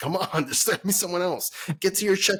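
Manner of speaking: high yell. Retelling what the speaker yelled at a player while watching, retelling yelling at the screen. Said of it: "yelling at the screen".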